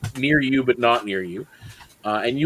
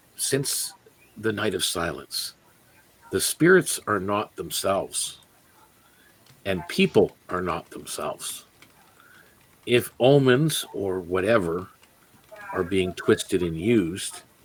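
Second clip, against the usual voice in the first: hushed, very quiet, low, close-in murmur; 5 semitones lower, 3 dB quieter than usual. As a character leaning in close to someone in the group, speak in a very quiet, low voice. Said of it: "very quietly, in a low voice".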